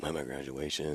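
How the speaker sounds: very quiet, hushed half-whisper under the breath. Retelling a draft call to a player at his graduation: imitating someone half-whispering. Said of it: "talking real quiet like this".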